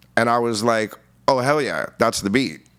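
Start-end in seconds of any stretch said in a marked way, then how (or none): none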